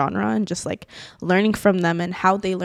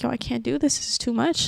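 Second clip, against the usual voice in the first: mock-tearful, distressed, higher pitch; 5 semitones higher than usual. Recalling calling the manager while doubting oneself, retelling own past crying. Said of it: "I'm crying and I'm like".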